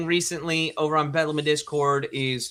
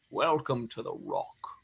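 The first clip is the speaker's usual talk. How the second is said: put-on low, quiet, soft older film-hero voice; 5 semitones lower, 8 dB quieter than usual. Quoting a line from the Alcatraz movie: older Sean Connery impression. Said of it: "it's a little bit of the older Connery".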